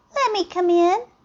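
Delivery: put-on teeny tiny, high-pitched little mouse voice. Narrator voicing the little mouse in a story, teeny tiny mouse voice. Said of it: "said the little mouse in a teeny tiny voice".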